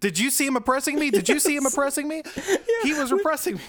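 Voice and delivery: put-on excited voice. Discussing a film scene, quoting a character after another leaves: imitating an excited voice. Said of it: "the excitement in his voice".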